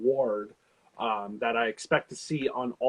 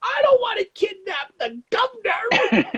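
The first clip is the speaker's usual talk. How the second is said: put-on very high, pitched-up teen voice; 9 dB louder than usual. Reading a caption aloud from their phone, doing a Josh voice. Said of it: "Use my jo- my best Josh voice".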